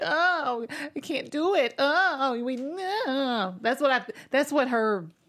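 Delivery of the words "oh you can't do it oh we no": acted-out begging, very slow, the word "no" stretched. Mocking how a show character comes in to ask for help: imitating someone pleading. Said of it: "come in pleading".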